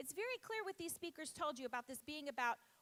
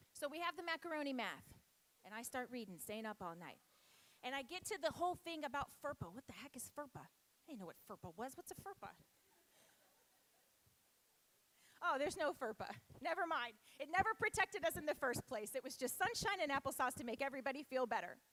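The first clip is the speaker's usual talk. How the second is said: normal voice, just talking, steadily pressing on; 2 semitones lower than usual. Speaking to a group with only three minutes left: talking fast. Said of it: "I'm gonna talk fast".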